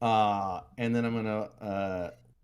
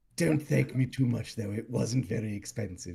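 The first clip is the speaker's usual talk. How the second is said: whispered, in a put-on character voice. Giving a companion a present of books in character: whispering in character. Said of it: "just whisper".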